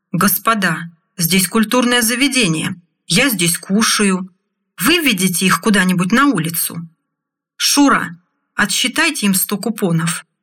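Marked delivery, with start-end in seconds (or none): none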